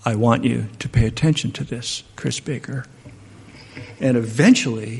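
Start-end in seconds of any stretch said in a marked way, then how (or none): 0.0-2.8 soft put-on speech, quieter. Describing how she leans in close, repeating her words to him softly. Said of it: "she leans in close and says".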